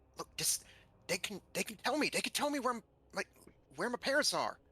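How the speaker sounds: whispering. In a role-play as Lupin, moving up to Sylvie, whispering. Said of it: "and just sort of whisper".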